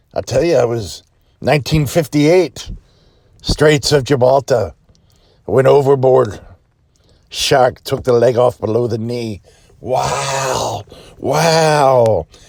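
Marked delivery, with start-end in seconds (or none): 0.2-9.4 put-on pirate voice. Telling a joke, a pirate answers a little boy: pirate voice. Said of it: "Pirate goes".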